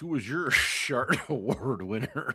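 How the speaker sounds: slow speech through giggling laughter. Asking another speaker who won the award, laughing while talking. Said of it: "I can't even say it without laughing".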